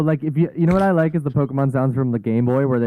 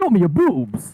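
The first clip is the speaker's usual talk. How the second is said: put-on game announcer voice, higher; 5 semitones higher than usual. Doing an impression of a favorite Smash character: Captain Falcon impression. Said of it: "my go-to Smash character, which is Captain Falcon".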